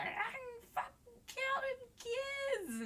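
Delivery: play-acted drawn-out shriek, very high pitched. Retelling a movie scene where the son drives: imitating someone screaming.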